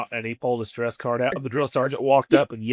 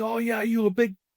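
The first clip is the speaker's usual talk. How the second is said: put-on scream, higher pitch; 10 semitones higher than usual. Retelling how the drill sergeant screamed at a crying private: imitating someone screaming. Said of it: "he's screaming at him".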